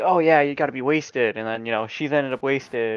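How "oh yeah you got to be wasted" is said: usual speaking voice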